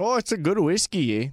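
poor, put-on attempt at an Irish accent. Imitating Conor McGregor in a bar over whiskey: failed Conor McGregor accent. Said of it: "that was not his accent".

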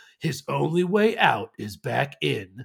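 epic, slow, dramatic movie-trailer narrator voice. Quoting a line from a film trailer, in a movie trailer voice. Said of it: "like in the movie voice".

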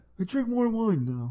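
put-on old man voice. Chatting in a group, speaker sounds like an old man impression. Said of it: "You sound like you're doing an old man impression".

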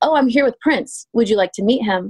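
ordinary talk

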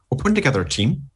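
put-on slipping into a Northern Irish accent. Likening someone bringing people back to Tony Stark recruiting; Tony Stark impression sounding Northern Irish. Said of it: "you sounded Northern Irish then".

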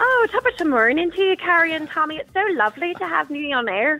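put-on Irish accent. Greeting the others on air, in a put-on Irish accent. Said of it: "I can do an Irish".

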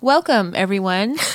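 broadcast-style news anchor voice. Podcast host opening the episode: newscaster voice. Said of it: "This is my newscaster voice".

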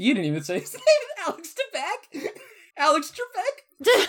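high-pitched squeal, laughing through the words.

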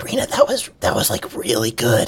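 soft, whispered aside. Voicing Cactus after another speaker shares a topic: whispering as Cactus. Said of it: "Cactus whispers".

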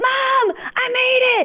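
very high, crying yell of joy. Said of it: "he's yelling out the car window".

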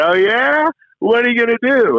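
shrill, very high yell. Retelling how an older writer called out to him, imitating someone yelling out. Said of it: "yells out".

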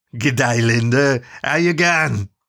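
slurred, words smeared into each other. Reading a story, narrator voices a boar greeting Linda: Meso's slurred, loud voice. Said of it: "Meso slurred loudly".

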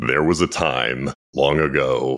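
classic movie-trailer announcer voice. Asked by the host for a classic movie trailer line, movie trailer voice. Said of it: "one movie trailer classic type of line".

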